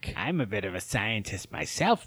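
hushed, deep villain impression. Showing off impressions while talking about Spider-Man movies: Willem Dafoe Green Goblin impression. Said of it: "I do Willem Dafoe's Green Goblin".

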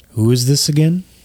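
deep, low-pitched voice. Narrating a scene and voicing a familiar figure, in a deep voice. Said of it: "a familiar deep voice say".

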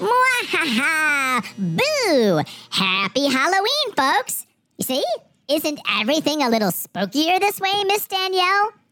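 cute, fuzzy, squeaky, high cartoon chipmunk voice. An announcer speaks through a voice-changing device, greeting folks: cute, fuzzy chipmunk voice. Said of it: "Kinda like a cute and fuzzy chipmunk".

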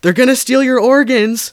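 shrill, loud yell pitched way up. Recounting a sister shouting to her sibling at the scene, retelling a yell. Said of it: "she yells to Sabina".

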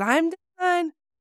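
shrill, very high yelled call. Retelling what a patient called out while you worked, retelling a near-yell. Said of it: "she's yelling this pretty much".

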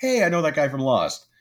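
excited yell, very high-pitched and loud. Retelling yelling at the TV while watching a movie: retelling a yell. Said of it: "I yelled at the T V".

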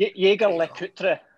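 put-on Scottish accent.

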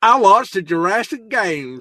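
generic, high-pitched American accent. Showing how all Americans supposedly talk, in an American accent. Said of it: "that's like saying all Americans talk like this".

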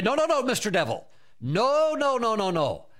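loud voice. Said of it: "jump on that thought immediately out loud".

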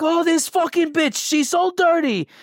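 loud, high-pitched yelling. Telling a story about using the bathroom, the speaker quotes a man: imitating someone yelling. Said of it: "he's yelling at somebody".

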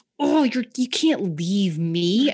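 high, loud, slow pleading. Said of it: "we're like".

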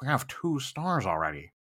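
sunk to a near-hush, very quiet. Retelling his own reply at a tournament, in a lowered voice. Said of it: "and I lower my voice".

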